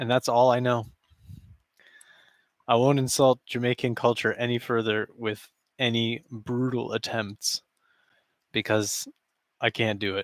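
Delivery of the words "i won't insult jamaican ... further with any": ordinary talk, nothing marked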